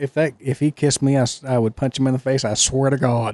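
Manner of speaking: normal talking voice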